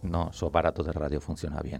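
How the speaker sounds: speaking softly. A radio guest, opening a talk on conspiracy, addresses listeners, speaking softly. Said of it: "somos nosotros que hablamos bajito".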